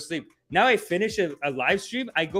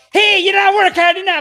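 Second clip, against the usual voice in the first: put-on very high, shrill, very loud screaming, Caribbean accent; 13 semitones higher, 11 dB louder than usual. Retelling a soccer coach yelling at six-year-old players, imitating a screaming coach. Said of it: "he's just screaming".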